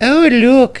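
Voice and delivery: teasing laughter, very high pitch. Narrator reads one engine remarking as another pulls into the station, laughing. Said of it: "laughed Emily".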